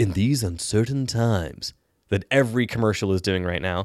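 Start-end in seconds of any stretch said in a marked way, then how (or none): 0.0-1.7 blockbuster movie trailer announcer voiceover. Thanking listeners of the show, the host uses a movie trailer voice. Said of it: "in my movie trailer voice".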